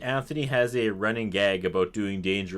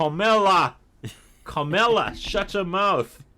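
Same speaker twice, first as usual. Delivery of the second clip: put-on New York accent, very high, loud, drawn out; 10 semitones higher, 5 dB louder than usual. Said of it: "What's with the accent".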